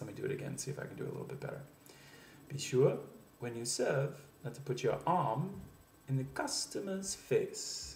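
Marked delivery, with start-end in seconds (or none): 2.5-8.0 slow inflection rising, building phrase by phrase. Demonstrating a sentence about serving customers: inflection building through the sentence. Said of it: "the sentence builds an inflection".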